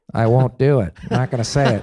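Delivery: firm, dug-in, stubborn tone. Retelling a lunch in the writers' room, imitating Norm. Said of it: "And Norm's sitting there like".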